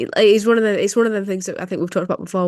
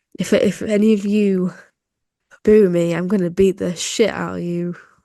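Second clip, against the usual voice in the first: put-on sluggish, slow, couldn't-care-less drawl. Imitating a wrestler's promo delivered like someone hungover: MJF impression, hungover tone. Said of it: "even his tone of voice was like someone who's, like, hungover".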